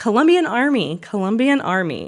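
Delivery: calling-out shout. Retelling aid workers announcing themselves aboard the helicopter: retelling a shout. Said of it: "the aid workers began to shout".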